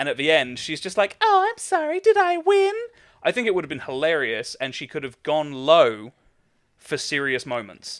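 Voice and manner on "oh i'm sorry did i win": very high-pitched, airy, light, slow condescending voice. Imagining Peach at the end of a Smash Brothers win: airy, condescending Peach voice. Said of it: "sort of airy, sort of light, almost condescending voice".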